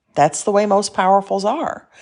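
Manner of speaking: ordinary talk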